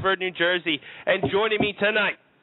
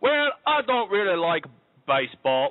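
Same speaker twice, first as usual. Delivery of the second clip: slow, stray, put-on Australian accent. Asked for his thoughts on baseball, answering in a put-on Australian accent. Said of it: "Why am I talking Australian?".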